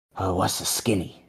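soft, hushed whisper under the breath. Tommy smiles kindly at Chadley, leans in, whispering. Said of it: "he leans in and he whispers".

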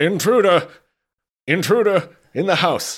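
very loud, very high, shrill alarmed cry. The game master voices a servant who spots the party: shouting out. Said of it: "he stands bolt upright and just shouts out".

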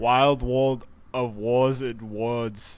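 speaking in an Austrian accent. Speaker asked to say a phrase one more time, Austrian accent. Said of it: "say that one more time in your Austrian accent".

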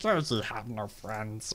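strange alien creature voice. Recalling an old impression, Stitch voice, like low Gollum. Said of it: "just like a lower pitch Golem".

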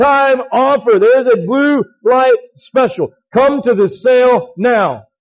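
loudspeaker intercom sale announcer voice. Recalling Kmart's blue light special, announcing like the intercom lady: loud Kmart intercom announcement. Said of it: "on the intercom in a loud voice".

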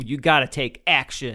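normal talking voice

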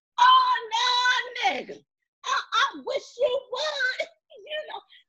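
very high, very slow yell. Retelling how they yelled at the screen, retelling a yell. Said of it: "I'm yelling at the screen like".

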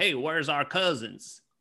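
put-on Southern accent over Italian accent. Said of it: "with Italian accents doing Southern accents".

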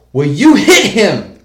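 very loud, high, shrill, slow, drawn-out bellow. Recalling a base policeman confronting a guy, retelling his yell. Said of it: "he's yelling at the guy".

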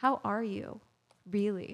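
very serious, grave and intense. Reading a level-two question card to a partner in a game: very serious, intense. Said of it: "so powerful".

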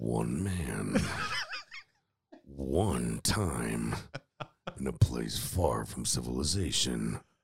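very slow, deep, drawn-out epic movie-trailer narration. Doing a mock trailer for a movie, in a movie trailer voice. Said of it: "Can you do the movie voice?".

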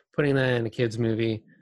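ordinary talk

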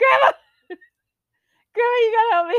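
high, loud panicked scream. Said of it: "I'm screaming".

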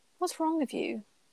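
soft, overly gentle, tender tone. Staring at him on the bench, she asks him gently. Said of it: "She asks gently".

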